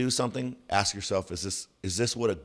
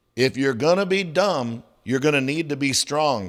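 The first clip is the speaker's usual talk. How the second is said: high, loud drill-instructor shouting; 5 semitones higher, 7 dB louder than usual. Standing over a football player doing exercises, imitating a drill instructor. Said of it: "start doing kind of the drill instructor thing".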